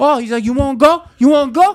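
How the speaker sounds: shrill, high, loud, jeering mocking tone. Telling how a guy in a nice restaurant started mocking him, retelling a mocking taunt. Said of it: "he starts mocking me".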